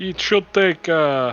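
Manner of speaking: put-on slipping into Russian accent. Voicing a photo shopkeeper telling players when prints are ready: shopkeeper voice with Russian-sounding accent. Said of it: "not a Russian accent".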